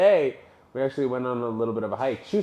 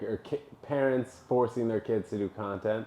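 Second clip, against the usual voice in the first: plain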